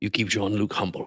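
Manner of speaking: whispered voice. Speaking in character while hugging another character: whispering in her ear. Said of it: "I'm whispering this to her in her ear".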